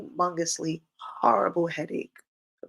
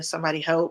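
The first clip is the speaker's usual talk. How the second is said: ordinary talk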